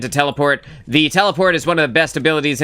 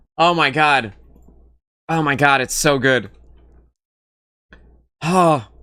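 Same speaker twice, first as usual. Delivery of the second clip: crying with helpless laughter. Reacting to a joke from the others: laughing to tears. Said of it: "I'm crying. I have tears in my eyes".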